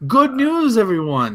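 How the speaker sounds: high, badly done squeaky voice. Sticking one more reference into the talk, do a bad Professor Farnsworth impression. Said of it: "it's just a shitty impersonation".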